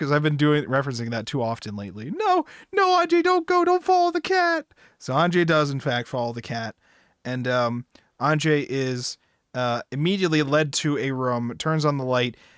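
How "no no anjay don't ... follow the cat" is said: acted shrill, very high, pleading screaming. Speaker recounts yelling a warning at someone, retelling a scream. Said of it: "I'm just screaming like".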